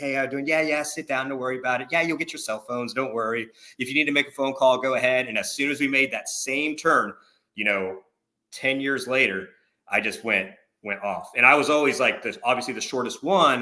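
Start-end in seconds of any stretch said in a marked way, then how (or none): 0.0-5.3 quick, friendly, easygoing casual tone. A drill sergeant acts out how he first greeted them, acting all nice. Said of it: "I would be all nice to them".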